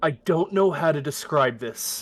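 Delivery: hushed, quiet tone. A player voices their character's line in a hushed tone. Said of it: "in a uh, a hushed tone, I'll be like".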